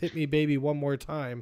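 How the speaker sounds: normal talking voice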